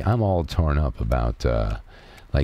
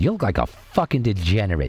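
put-on Brooklyn accent, pitched up; 5 semitones higher than usual. Retelling what his dad said on seeing his new back tattoo, brooklyn accent. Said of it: "my dad had a Brooklyn accent".

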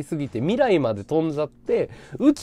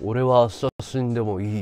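put-on voice, much lower than normal; 8 semitones lower than usual. Recounting someone's reply to a question at Renoir, in a low voice. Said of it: "って低い声で言われたよ".

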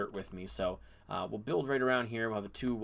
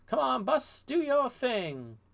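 very high, loud, swooping cartoon voice; 5 dB louder than usual. Commenting on their growing wheat, switching to a Miss Frizzle voice. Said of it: "in my finest Miss Frizzle voice".

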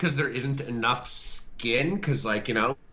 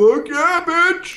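mock drunk whoop, very high and very loud; 11 dB louder than usual. Retelling answering a question in line at a midnight release: imitating own drunk self. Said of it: "you hear my drunk ass".

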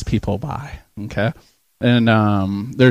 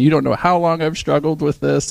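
high, tearful crying voice, acted out; 5 semitones higher than usual. Retelling what a crying elderly lady said to him, imitating someone crying. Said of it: "She started crying".

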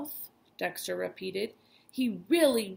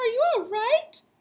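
put-on scared, high, raised old woman voice; 5 dB louder than usual. Grandma asks Dexter after he falls down, in a scared voice. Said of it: "Grandma said in a scared voice".

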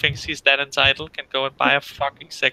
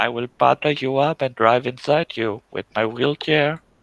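robotic speech-synthesizer voice. Joking about sex robots, a speaker does a Hawking speech-synth voice. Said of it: "Low hawking".

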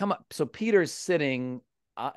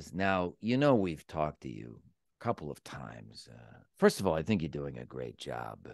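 mock deadly serious tone, very low voice; 10 semitones lower, 6 dB quieter than usual. Quoting what a man said to the speaker, in a mock-serious tone. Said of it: "in the serious tone, the most serious tone, he says".

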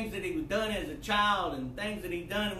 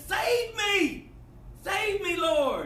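put-on very high, very slow, drawn-out loud shout; 12 semitones higher, 5 dB louder than usual. Telling a story where a man in the darkness yells back to a voice, retelling a yell. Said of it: "he yelled back".

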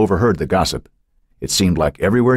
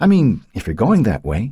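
nervous, pressing on; 3 semitones higher than usual. Narrator reading Becky going on when Matt makes no reply, nervous. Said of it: "she nervously went on".

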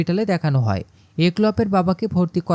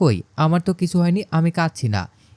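usual speaking voice

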